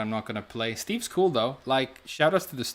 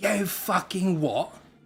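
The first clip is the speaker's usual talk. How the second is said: fake British accent, pitched up, taunting; 7 semitones higher than usual. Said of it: "he activates his rage art and goes".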